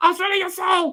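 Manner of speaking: sped-up chipmunk voice. Imitating a recording toy playing a line back: imitating a chipmunk voice toy. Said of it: "says it back to you in a chipmunk voice".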